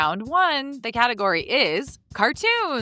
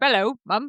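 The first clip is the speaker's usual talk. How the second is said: put-on British accent. Greeting mum again in a put-on british accent: british minion voice. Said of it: "British minions".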